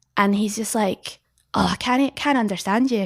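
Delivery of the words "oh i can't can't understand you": clumsy, terrible Northeast England accent attempt. Speaker retells a local man who can't understand a woman's question: terrible Northeast English accent. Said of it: "terrible impression of someone from the Northeast".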